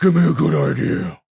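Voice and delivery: loud, rough, creaky, gravelly put-on hero voice. Demanding something from your own brain, in a gravelly Batman voice. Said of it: "like in a Batman voice".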